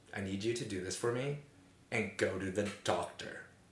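mock level-headed, sensible, responsible grown-up voice. Retelling how a roommate urged going to the doctor: imitating a responsible voice. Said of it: "responsible voice".

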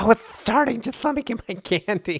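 put-on very high, dotty, crazy old lady voice. Teasing the other host about opening candy before recording, imitating a crazy old lady. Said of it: "you were some crazy old lady like".

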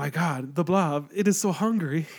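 put-on thick, heavy Spanish accent. Retelling a friend's story of a moviegoer's remark, in a thick spanish accent. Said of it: "a thick Spanish accent".

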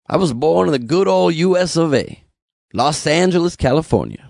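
put-on slow, strong southern drawl. Speaker insisting he is a citizen, in a southern accent. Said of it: "I say it with a southern accent".

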